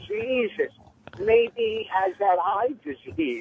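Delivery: put-on loud heckling shout. Retelling a heckle shouted from the back of the club: imitating Patrice yelling at top of lungs. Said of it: "at the top of his lungs".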